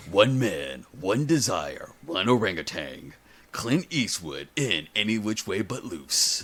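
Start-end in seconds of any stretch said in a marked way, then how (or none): 0.1-3.1 movie trailer voice, much lower, slower. Joking about a college course in movie voices, doing a movie guy voice. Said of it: "Movie guy voice 101".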